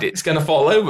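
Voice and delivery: ordinary talk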